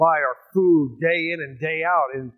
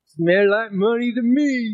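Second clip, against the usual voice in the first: put-on lisp, spoken at a higher pitch; 7 semitones higher than usual. Retelling what a friend at the service said, imitating a friend's lisp. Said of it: "he had a lisp".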